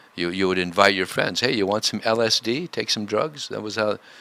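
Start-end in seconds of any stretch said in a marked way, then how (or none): none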